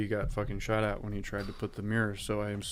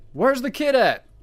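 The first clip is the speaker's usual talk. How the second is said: very loud, shrill, high-pitched shout; 12 dB louder than usual. A narrator voices a man calling out from inside a barn, shouting. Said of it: "And then he shouts".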